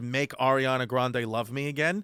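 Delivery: ordinary delivery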